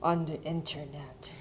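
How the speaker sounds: very seedy, sleazy, sly, insinuating voice. Telling people how a couple met, answering in a put-on seedy voice. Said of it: "said in a very seedy voice".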